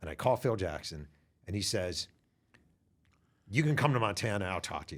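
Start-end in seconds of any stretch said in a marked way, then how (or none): 3.5-5.0 gruff put-on voice. Retelling a phone call with Phil Jackson, doing his gruff voice. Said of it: "kind of in a gruff way".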